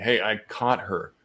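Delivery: ordinary talk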